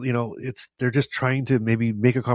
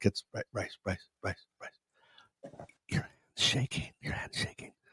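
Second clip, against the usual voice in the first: very quiet, hushed whisper under the breath; 3 semitones lower, 11 dB quieter than usual. Retelling what dad says at dinner: imitating dad speaking quietly. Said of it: "my dad very quietly".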